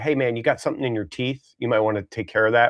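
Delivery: put-on quiet tone. Acting out what a good friend would say to you; imitating a quiet aside. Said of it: "quietly say to you".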